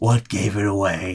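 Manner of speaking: words laced with chuckling throughout. Voicing a character answering a player's guess: chuckling in character. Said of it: "as he chuckles".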